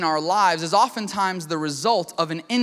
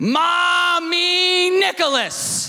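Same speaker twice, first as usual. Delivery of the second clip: urgent, very high put-on toddler screech, mommy stretched; 11 semitones higher, 4 dB louder than usual. Retelling a toddler upset with mommy, imitating a toddler's scream. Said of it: "tiny little toddler voice scream at the top of his lungs".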